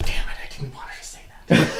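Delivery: hushed, whispered mutter under the breath. A player voices his character's reaction to another character, muttering under breath. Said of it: "Adric under his breath is going".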